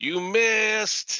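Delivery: very high, shrill put-on little-kid shout. Retelling a boy yelling from down the alley after a miss: imitating a little kid yelling. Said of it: "top of his little eight-year-old voice".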